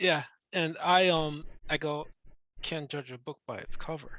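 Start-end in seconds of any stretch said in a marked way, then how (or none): 2.6-4.2 very quiet, under the breath. Speaking in character at a bar, eyes on the drink: said very quietly. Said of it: "Very quietly".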